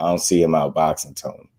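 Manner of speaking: ordinary talk, nothing marked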